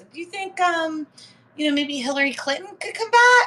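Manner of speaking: very high, pitched way up put-on voice. Imitating a woman the speaker knows, high-pitched imitation of her. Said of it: "It's a spot on imitation of her. And she just kind of has this high pitched voice".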